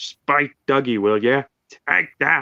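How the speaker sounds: slow, steady, drawn-out delivery. Quoting a favorite line from the classic seasons: imitating Donald. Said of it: "Donald was like".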